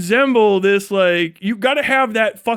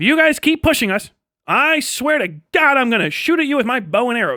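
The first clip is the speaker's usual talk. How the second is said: strange, made-up put-on alien creature voice; 3 semitones higher than usual. Acting out an alien pleading with Jake Sully: imitating the alien. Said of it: "they're like".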